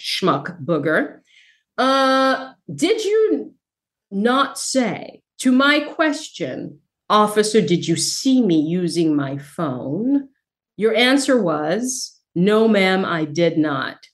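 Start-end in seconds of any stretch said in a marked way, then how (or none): 0.0-1.2 mock mutter under breath, much lower. Addressing a court about an officer, retelling an under-breath mutter. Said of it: "under my breath".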